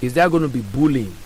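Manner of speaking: plain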